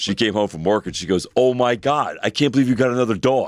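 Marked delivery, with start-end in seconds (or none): 1.4-3.5 put-on yelling, higher and louder. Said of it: "she went from yelling at me".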